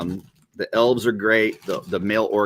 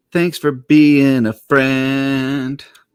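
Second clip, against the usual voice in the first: high, very loud, slow call, stretching friend; 5 semitones higher, 8 dB louder than usual. Reading a note from a viewer aloud: Golden Girls voice. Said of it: "I'll do this in my best Golden Girls voice".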